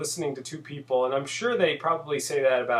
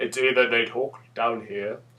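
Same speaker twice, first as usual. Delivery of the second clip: mock deep low British voice, lower; 4 semitones lower than usual. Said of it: "either high-pitched voices or low-pitched voices".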